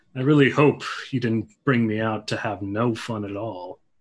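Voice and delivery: weary sigh. A narrator voices a character's reply after the others urge leaving, sighing. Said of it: "He kind of just sighs and he says".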